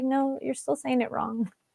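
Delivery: soft, polite voice. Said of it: "I like that she's so polite".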